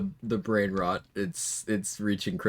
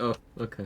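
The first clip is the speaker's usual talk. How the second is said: put-on resigned acceptance; 2 semitones higher, 4 dB quieter than usual. Retelling own earlier reply to a joke: imitating own resigned acceptance. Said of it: "just the resigned, just acceptance".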